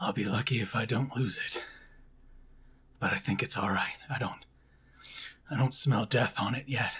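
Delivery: rough, raspy, hoarse rasping speech. A man in the camp talks about his leg, in a raspy voice. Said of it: "he says through his raspy voice".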